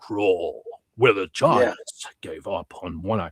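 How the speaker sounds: deep, slow movie-trailer narrator voice. Rereading a chat comment the way it should have been read: deep voice movie trailer guy. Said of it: "that deep voice movie guy?".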